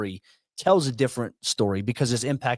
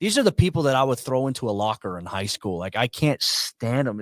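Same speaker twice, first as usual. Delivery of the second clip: usual speaking voice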